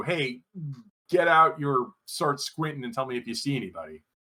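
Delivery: ordinary talk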